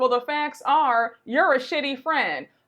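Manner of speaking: normal talking voice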